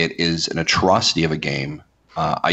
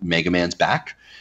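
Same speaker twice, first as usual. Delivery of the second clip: normal talking voice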